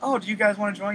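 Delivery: sugary, put-on friendly. Picturing the woman coming up and asking, imitating a real nice tone. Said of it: "coming up real nice".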